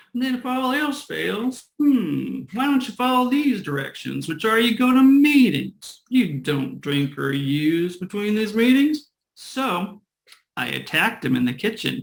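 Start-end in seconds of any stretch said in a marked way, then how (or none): 0.1-9.1 put-on Southern US accent, pitched up. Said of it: "he was from somewhere in the South".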